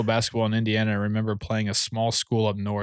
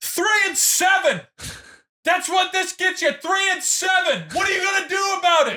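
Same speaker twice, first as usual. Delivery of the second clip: very high, relentless yell; 3 dB louder than usual. Recalling a trainer on the elliptical during lift circuits: imitating trainer yelling. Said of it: "he's just yelling".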